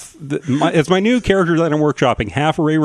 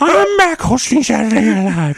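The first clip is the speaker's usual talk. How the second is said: goofy, pitched-up, silly comedian-style voice; 7 semitones higher than usual. Discussing Adam Sandler's return to host, the speaker does an Adam Sandler impression. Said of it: "the impression we run off doing".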